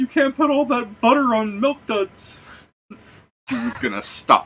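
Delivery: voice breaking up and cracking very high. Speaker tries to do the guy from The Simpsons, cracking voice. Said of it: "try and make my voice crack".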